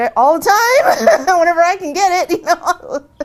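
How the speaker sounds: laughing while speaking, high and loud.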